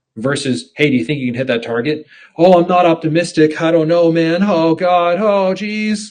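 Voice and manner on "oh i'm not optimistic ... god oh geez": hesitant, halting, unsure, high, slow, drawn-out put-on voice. Contrasting a confident answer with a doubtful one, Morty voice. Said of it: "I was kind of doing an impression of Morty for that".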